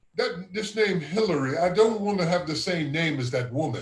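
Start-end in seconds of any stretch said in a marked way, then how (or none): none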